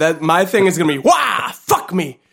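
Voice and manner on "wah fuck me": tossed-off cartoon voice, pitched high. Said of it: "You kind of sound like The Mask when you do it".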